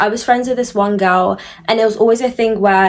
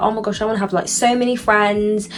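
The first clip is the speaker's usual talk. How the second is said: normal talking voice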